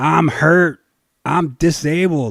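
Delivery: mock screaming in pain. Telling a story about a worker who jumped off a ladder, imitating screaming in pain. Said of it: "he's screaming in pain".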